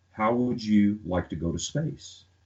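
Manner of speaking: ordinary talk, nothing marked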